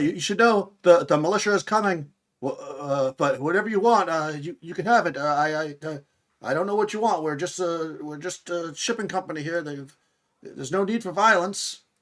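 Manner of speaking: shaky, high, trembling, halting intercom-like voice. A voice over the intercom addresses the intruders: shaky voice over the intercom. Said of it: "a shaky voice uh, uh, over over the intercom".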